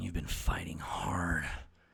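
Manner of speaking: movie trailer announcer voice. Imagining the voiceover for a trailer, in a deep raspy trailer voiceover. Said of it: "This is a real deep, raspy voice".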